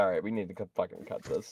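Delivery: hushed, quiet aside.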